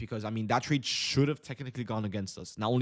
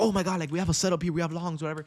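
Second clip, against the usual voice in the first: play-acted energized streamer hype, high and excited; 6 semitones higher than usual. Imitating own usual excited streaming voice: imitating own usual excited stream voice. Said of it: "I don't sound as energized as I usually am".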